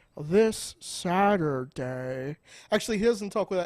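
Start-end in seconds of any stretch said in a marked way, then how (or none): 0.3-2.4 slow put-on voice. Doing an impression of an opponent for the hosts: Corey impression, talking slow. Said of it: "I can do a Corey impression".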